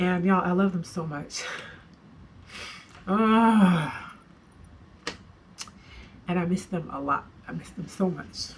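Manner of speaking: crying through the words, choked up, drawn-out "ah". Telling the audience how much they love and miss them, crying, choked up. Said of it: "I keep thinking that I'll stop crying".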